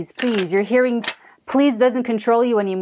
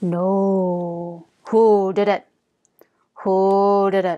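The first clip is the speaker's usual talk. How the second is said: low, very slow, lowered dog-training voice. Showing how to tell off a dog, lowered voice on no. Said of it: "I always lower my voice when I'm training dogs".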